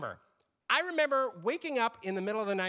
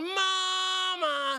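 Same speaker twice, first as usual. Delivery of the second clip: put-on thin, toneless, high, nasal little kid voice; 11 semitones higher than usual. Imitating one of their kids calling for a parent: nasal, high-pitched child's voice. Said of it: "It's a nasal, high pitched, lacking in any vocal tone".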